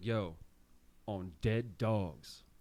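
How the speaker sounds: put-on stern voice. Retelling a coworker's story about weed in his car: imitating a coworker getting stern. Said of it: "he gets real, like, stern. He's like".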